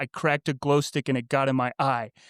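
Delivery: ordinary talk, nothing marked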